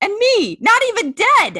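shrill, loud, swooping cackling voice. Reading a favorite book line aloud as the housekeeper cackles, in a cackling Mapes voice. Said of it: "your shout out Mapes voice very similar to the audiobook voice".

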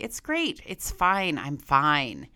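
slow, swooping, play-acted heavy sarcasm. Retelling past replies to a best friend about dating: imitating own sarcastic reply. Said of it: "sarcastically say".

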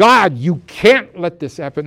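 mock frantic yelling. Retelling a mother in the ER after her child couldn't be brought back, retelling a yell. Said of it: "she's yelling there in the ER".

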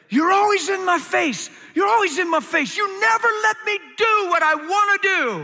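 very high, shrill, angry screaming rant. Recalling screaming alone in the bedroom at a Bible, re-enacting the scream. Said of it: "I was screaming at God".

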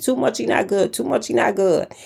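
put-on tiny, high, creaky child's voice. Recalling a young son sick from hot Cheetos: little bitty child voice. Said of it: "saying in his little bitty voice".

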